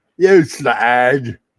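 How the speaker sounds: very loud Cockney gangster voice. Showing how halflings talk as East End London gangsters. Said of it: "My halflings are East End London gangsters".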